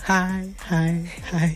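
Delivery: soft, creepy lurking stalker voice. Reacting to the other speaker's echoing greeting, showing how a stalker sounds: creepy stalker voice. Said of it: "Why do you sound like a stalker?".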